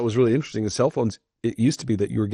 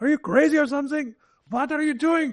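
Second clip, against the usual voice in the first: very high put-on German accent. Quoting what their father always said back: imitating dad's German accent. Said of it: "He has a German accent".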